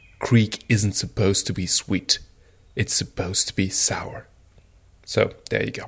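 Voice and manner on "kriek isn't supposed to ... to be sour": mock strict, stern, firm, no-nonsense tone. Retelling the brewery owner correcting the speaker's remark; imitating a stern reply. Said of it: "said in a really stern voice".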